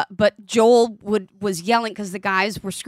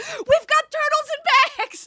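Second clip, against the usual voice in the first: put-on shrill, high, delighted excited yell. Speaker recalls yelling while watching the episode, retelling a yell out. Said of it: "I yell out".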